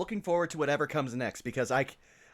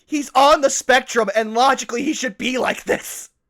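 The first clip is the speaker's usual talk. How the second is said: exasperated, explaining tone. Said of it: "I'm like".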